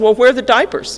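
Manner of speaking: self-righteous tone with major attitude. Retelling asking him for the diapers when he comes in: imitating own past major attitude. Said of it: "I have this major attitude".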